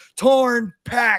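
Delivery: high, slow, wailing wrestler voice.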